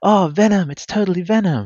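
put-on small child's voice, very high and loud. Retelling calling in to answer a quiz question as a kid, little kid's voice. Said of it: "with my little 9 or 10 year old voice".

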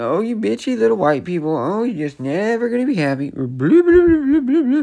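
put-on mouthy, sneering, very high sarcastic mocking voice. Speaker acts out how a man made a question sound, imitating a mocking tone. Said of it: "he was making it sound like".

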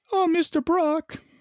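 squeaky, very high-pitched superhero voice. Imagining a Spider-Man talking to Venom: imitating Tom Holland's Spider-Man. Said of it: "Talking to this Venom like".

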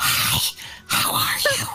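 very slow, worn-out, hoarse voice. Showing the others how the voice sounded when it was gone: imitating own lost voice. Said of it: "is not sounding like this".

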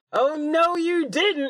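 very high, shrill, loud, booming, drawn-out yell. Voicing a character who gets grabbed through a window: yelling in character. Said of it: "she just yells".

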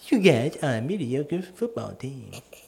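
slow, stretched-out character voice with swooping, swinging pitch. Talking with a friend about football and slipping into sounding like Timmy. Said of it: "I don't know why I sound like Timmy now".

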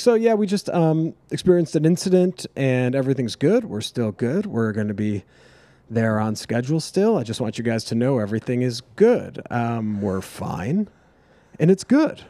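put-on nervous pilot announcer voice. Retelling the pilot's intercom announcement after lightning hit: imitating a nervous pilot. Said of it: "was just so nervous, had no clue what to say".

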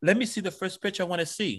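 put-on accent from France. Retelling what the model said after class: French accent. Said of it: "she's in her French accent".

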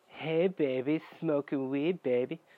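very slow, dragged-out drawl. Retelling what the boyfriend said while smoking: imitating the boyfriend. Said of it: "I'm not gonna do the impressions".

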